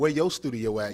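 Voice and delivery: ordinary talk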